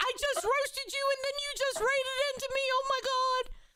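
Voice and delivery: mock freaked-out, frantic panic, very high. Speaker retells a girl freaking out after a raid, imitating someone panicking. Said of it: "you should have a full panic".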